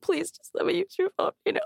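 mock very high, tearful, sobbing begging plea. Recalling asking a man for his phone in an emergency, acting out crying and pleading. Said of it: "started crying".

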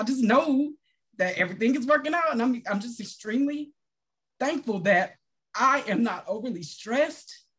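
talking through tears, crying. Sharing gratitude that everything is working out, crying while talking. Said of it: "I'm crying right now".

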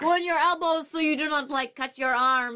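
put-on French accent. Retelling what a French man said about a crawl space full of bones, in a French accent. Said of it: "so that's my French accent".

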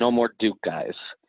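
ordinary talk, nothing marked

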